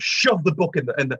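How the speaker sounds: plain reading voice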